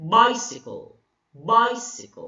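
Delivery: bicycle, first syllable bi- stressed. Explaining the dactyl with an example word, with stress on the first syllable of bicycle. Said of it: "You put a stress on the first syllable".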